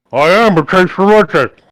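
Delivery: talking through a mouthful. Playing a character at a shared meal, talking through a mouthful of food. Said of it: "somewhat through a mouthful of food".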